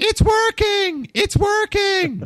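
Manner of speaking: very loud, very high, drawn-out scream. Imagining the ship's engines starting again, screaming as the Mandalorian. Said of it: "started screaming".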